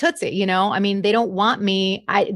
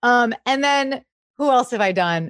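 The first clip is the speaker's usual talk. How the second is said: ordinary talk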